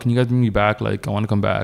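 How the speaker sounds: mock flat, emotionless deadpan voice. Retelling how she asked to be brought back: imitating a flat emotionless voice. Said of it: "no emotion at all".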